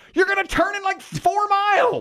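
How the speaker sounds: shrill, very high-pitched, acted-out yell. Speaker retells a woman giving him driving directions, imitating her yelling. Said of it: "Why are we yelling?".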